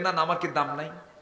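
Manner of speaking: put-on angry complaining tone. Retelling a grandson's complaint to the Prophet, imitating an angry complaint. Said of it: "রেগে আছো কেন? ক্ষেপে আছো কেন?".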